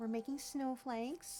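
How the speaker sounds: hushed, secretive half-whisper. Welcoming viewers and keeping a secret from a partner, half-whispering. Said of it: "I have to whisper it".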